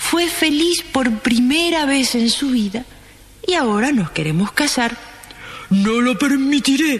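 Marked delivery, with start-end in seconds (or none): 5.7-7.0 wrathful, stern, commanding. Reading a story aloud, voicing the emperor answering the prince, roaring thunderously. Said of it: "rugió el emperador con voz de trueno".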